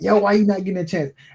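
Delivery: high, screamed, put-on yelling. Acting out a receiver complaining to the quarterback: imitating a player screaming. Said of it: "I'm screaming at my quarterback".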